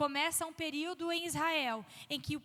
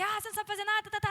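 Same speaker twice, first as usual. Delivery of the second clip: mock impatient, angry, high-pitched yelling rant; 6 semitones higher, 4 dB louder than usual. Acting out an impatient person scolding a learner: imitating someone yelling and cursing. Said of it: "É muito mais fácil gritar e xingar".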